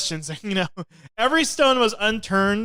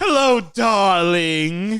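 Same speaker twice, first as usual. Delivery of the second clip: mock villainess voice; 4 dB louder than usual. Doing a Cruella Minute bit: Cruella de Vil voice. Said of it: "we're having the Cruella Minute".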